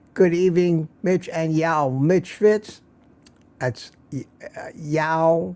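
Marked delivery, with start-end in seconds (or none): none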